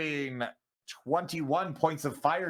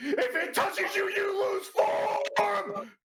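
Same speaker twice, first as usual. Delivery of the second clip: very high, very slow, drawn-out alarmed scream. Voicing a character who looks back at the party: screaming a warning. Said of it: "Ray looks back at everyone and screams".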